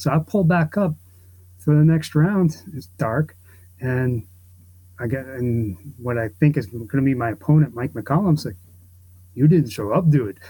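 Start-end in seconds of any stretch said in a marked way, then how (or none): 9.3-10.4 put-on Canadian accent. Retelling what his opponent told him about the next round, in a Canadian accent. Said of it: "with a Canadian accent".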